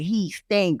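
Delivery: ordinary delivery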